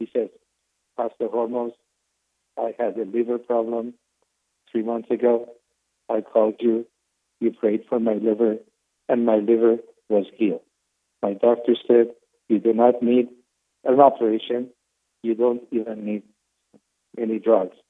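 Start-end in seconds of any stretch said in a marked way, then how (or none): 1.0-17.7 emotionless, level, flat monotone voice. A pastor imitates a caller from a live program, imitating a monotone caller. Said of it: "He was monotone".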